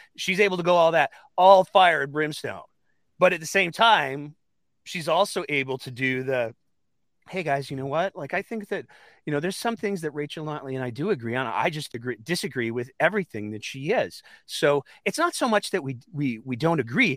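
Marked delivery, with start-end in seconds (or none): 7.3-14.3 soothing, unruffled, very calm, reassuring voice. Imitating a politician's friendly line: imitating a calm, reassuring voice. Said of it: "in a very, very calm and reassuring voice".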